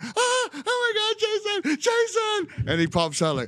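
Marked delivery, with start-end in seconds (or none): 0.0-2.7 very high, very slow, drawn-out put-on scream. Retelling a story from a film shoot, Terry Crews impression, screaming. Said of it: "Terry Crews is like screaming".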